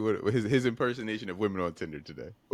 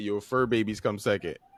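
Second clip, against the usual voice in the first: usual speaking voice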